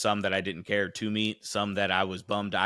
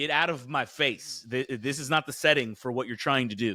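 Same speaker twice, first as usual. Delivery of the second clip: normal talking voice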